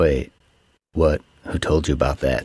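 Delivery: low, play-acted, all-serious earnest tone. Retelling a film scene where a friend asks questions: imitating someone being serious. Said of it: "all serious".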